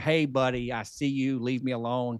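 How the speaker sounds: ordinary delivery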